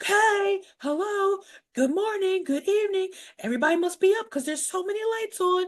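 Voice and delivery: put-on drunk man voice, very high, calling out. Retelling a character coming home wildly drunk: imitating drunk Peter. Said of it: "like a classic drunk person".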